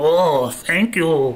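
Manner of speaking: high, fawning voice. Imagining someone thanking the authorities: Asmongold impression as Smeagol. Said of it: "He's like".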